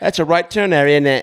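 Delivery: prim British navigation voice. Imitating a phone navigation voice set to a British accent: imitating British-accent Siri. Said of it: "my Siri on my phone to, like, a British accent".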